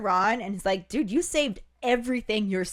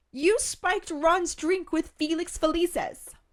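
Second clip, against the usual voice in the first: high, super squeaky and shrill voice; 8 semitones higher than usual. Retelling a story scene, voicing Hermione speaking to Harry, super squeaky Hermione voice. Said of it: "I just imagine Hermione's voice getting super squeaky".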